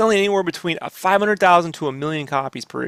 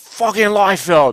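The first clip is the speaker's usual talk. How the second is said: put-on New York accent and way of talking; 2 semitones higher, 4 dB louder than usual. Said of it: "she had that New York accent".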